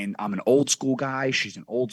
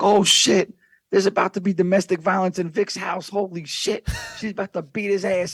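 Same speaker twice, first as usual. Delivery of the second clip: put-on accent from the Dominican Republic; 7 semitones higher than usual. Retelling what a gaming friend from Brooklyn said: Dominican accent. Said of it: "Now you guys get this whole Dominican accent".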